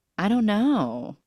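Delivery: mock coy bashful voice. Retelling how she answered a question about her scar, imitating a coy tone. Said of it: "in like this very coy".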